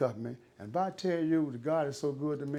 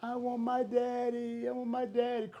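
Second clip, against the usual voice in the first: put-on acted tearful toddler cry, high, slow, drawn out; 9 semitones higher than usual. Retelling a three-year-old daughter in the back seat: imitating a crying child. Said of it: "crying and going on".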